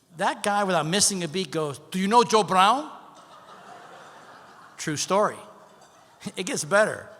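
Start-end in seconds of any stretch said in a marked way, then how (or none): 1.9-2.9 thick put-on Cuban accent, raised voice. Retelling a talkative cuban gentleman's question to him: put-on thick cuban accent. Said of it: "thick Cuban accent".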